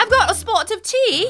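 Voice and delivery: worst fake British accent, very high and drawn-out. Saying they're sticking around with tea, in a bad put-on british accent. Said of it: "That was the worst British accent ever".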